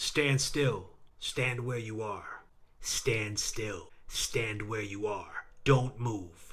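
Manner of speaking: low, metallic, mechanical robot voice. Narrator reads a driverless police car calling out to a man, metallic voice. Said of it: "there was no one in the front seat. No one in the car at all. / there was no one in the front seat. No one in the car at all. / A metallic voice called to him, / The police car sat in the center of th".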